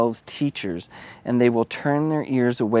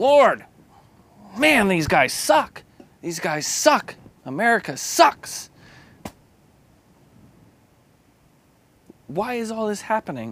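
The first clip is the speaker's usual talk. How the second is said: high, put-on, venting, ranting complaint tone; 9 semitones higher than usual. Retelling ranting in the car about leaders: imitating own ranting. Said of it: "as I'm ranting in my car".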